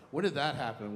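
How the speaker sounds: ordinary delivery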